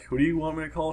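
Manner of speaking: ordinary delivery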